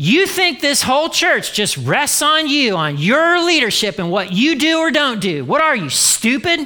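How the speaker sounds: high-pitched telling-off. Retelling how Jenny scolded in the bedroom: imitating Jenny scolding. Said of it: "Jenny would regularly scold me".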